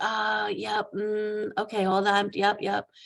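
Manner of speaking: put-on long drawn-out ums. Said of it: "And then the long ums".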